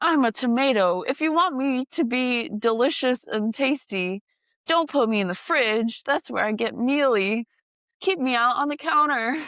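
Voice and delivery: cranky, angry put-on talking tomato voice, ranting. Describing animated food videos, voicing a tomato: imitating angry talking food. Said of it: "angry food".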